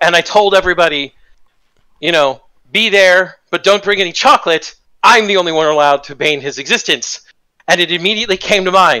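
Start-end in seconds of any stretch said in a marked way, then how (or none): none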